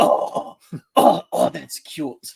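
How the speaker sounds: slow, creaky, drawn-out character drawl. Describing a Mad TV character to the audience: Lorraine voice from Mad TV. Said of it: "the character Lorraine, ... and she goes".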